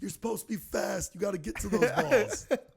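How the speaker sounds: shrill, very high, very loud scream. Retelling how they yelled at him while playing: imitating own past screaming. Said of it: "I'm also screaming".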